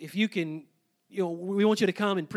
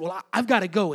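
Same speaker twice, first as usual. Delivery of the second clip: panicked put-on girl voice, louder; 4 dB louder than usual. Retelling a student's hurried exit at a christmas party: imitating a panicked girl. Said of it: "she had this just almost panic".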